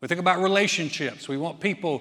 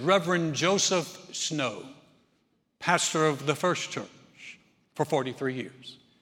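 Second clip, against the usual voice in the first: very pastoral, sermon-like pulpit preacher voice; 2 semitones lower than usual. Telling a joke, the pastor steps up to the angel, very pastoral voice. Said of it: "in his very pastoral voice".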